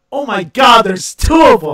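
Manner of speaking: very loud, high pitched, astonished exclamation. Recalling spotting two identical children, retelling a really loud exclamation. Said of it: "I said really loud".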